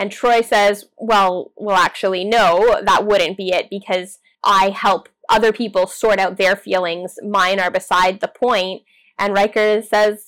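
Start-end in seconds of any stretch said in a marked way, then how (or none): none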